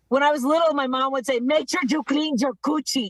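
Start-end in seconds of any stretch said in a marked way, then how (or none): 1.4-3.1 put-on angry scolding tone. Retelling what mom used to say when the speaker was little: imitating mom sounding angry. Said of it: "sounded so angry about it".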